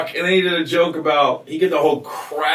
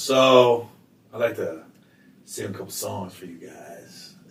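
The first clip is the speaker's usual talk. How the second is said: mock deadpan monotone voice; 7 semitones lower, 4 dB quieter than usual. Retelling a comedian's piano bit in his style: monotone Craig Robinson impression. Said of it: "he was monotone".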